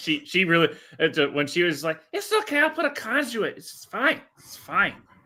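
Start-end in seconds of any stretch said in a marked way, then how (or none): 2.1-4.9 put-on, very high-pitched tipsy drunk voice. Recalling an audiobook narrator's reading, imitating a drunk voice. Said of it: "she can do a really good drunk voice".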